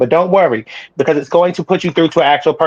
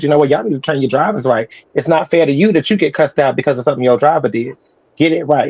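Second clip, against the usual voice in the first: ordinary talk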